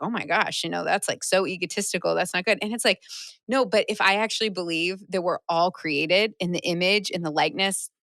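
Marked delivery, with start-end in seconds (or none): none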